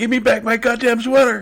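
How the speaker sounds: acted, furious, shrill yell, very high and loud. Telling a story about confronting a man in traffic, retelling a yell. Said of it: "I started yelling at him".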